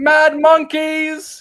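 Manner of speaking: high, slow, drawn-out yell. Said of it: "Robin just yells out".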